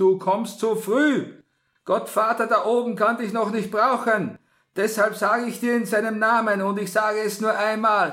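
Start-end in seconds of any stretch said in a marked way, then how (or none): 0.0-4.4 sharp, cutting, very high raised voice. A priest calls out to an unconscious girl in a sharp tone. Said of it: "rief der Pater in scharfem Ton".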